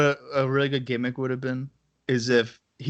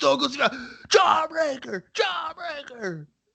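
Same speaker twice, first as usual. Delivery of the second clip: very high-pitched wrestling commentator call. Imagining a commentator calling the move a jawbreaker: Jim Ross commentary voice. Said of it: "could you imagine Jim Ross being like".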